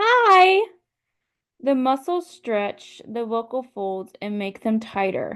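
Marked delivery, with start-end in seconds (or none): 0.0-0.6 very high, very loud voice. Explaining vocal folds, showing a high voice: high-pitched "hi". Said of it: "When we speak in a high voice, like this".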